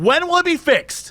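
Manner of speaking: high, angry, indignant yelling. Retelling a woman confronting a worker over a billboard, imitating a woman yelling. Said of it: "yelling at this poor guy".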